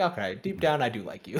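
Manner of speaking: plain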